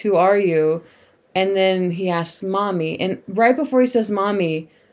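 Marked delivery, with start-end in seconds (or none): none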